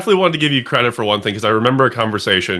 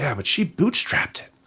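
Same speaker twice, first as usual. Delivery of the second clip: secretive, soft, hushed whisper; 3 semitones higher, 8 dB quieter than usual. Speaker recounts how a woman reacted when the listener's name came up, retelling a whisper. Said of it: "in a very whispered tone".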